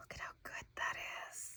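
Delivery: hushed, very quiet whisper. Laying down stickers, the speaker talks to her viewers: whispering. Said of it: "I don't know why I'm whispering".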